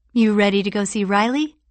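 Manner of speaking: plain reading voice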